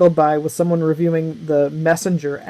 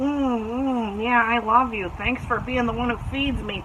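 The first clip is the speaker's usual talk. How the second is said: put-on cat voice; 7 semitones higher, 6 dB quieter than usual. Speaker describes feeding their cat, imitating the cat. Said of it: "He's like".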